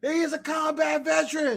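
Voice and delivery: mock very slow, emphatic, drawn-out yell. Retelling how a bystander screamed during an arrest: imitating someone screaming. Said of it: "A motherfucker was screaming".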